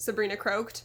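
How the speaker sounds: ordinary delivery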